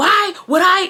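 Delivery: angry exclamation, pitch rising.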